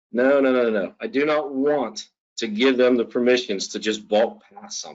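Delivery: ordinary talk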